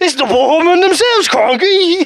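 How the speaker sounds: high, blurted, mock Australian host voice. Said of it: "The way he delivered that".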